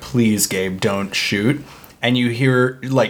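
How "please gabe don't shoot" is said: mock earnest, begging, pleading tone. Retelling a scene where a character begs a gunman: imitating someone pleading. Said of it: "pleading with him".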